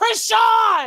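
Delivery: loud, high-pitched hype yell. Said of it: "In my Kai Cenat voice, I am screaming".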